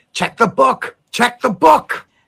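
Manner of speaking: very high, shrill, rough, rasping screech. A narrator voices a character crying out over a terrible noise: Abramelin screeching. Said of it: "Screeches Abramelin over the terrible noise".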